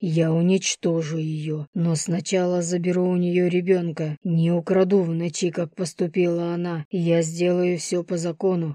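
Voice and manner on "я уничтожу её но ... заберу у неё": ordinary delivery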